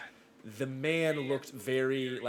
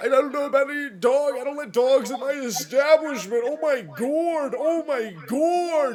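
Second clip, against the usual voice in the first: incoherent blubbering cry, very high, shrill and loud; 12 semitones higher, 11 dB louder than usual. Game master voicing an intimidated man being questioned, blubbering. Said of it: "And he blubbering".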